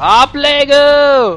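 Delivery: excited, very high, loud, stretched-out caster yell.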